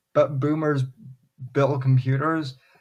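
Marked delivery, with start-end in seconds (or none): none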